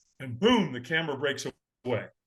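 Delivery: normal talking voice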